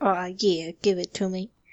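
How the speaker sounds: talking pet dog voice. Saying what the dog said while being petted: voicing Dolly the dog. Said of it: "'Cause that's how she talks".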